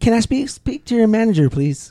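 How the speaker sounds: high-pitched, drawn-out, insistent voice. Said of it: "That's Karen".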